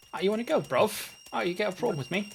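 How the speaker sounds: put-on proper Northern English accent, very high. Imagining a game mode with British voice actors, proper Northern English accent. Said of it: "they're all like proper Northerners".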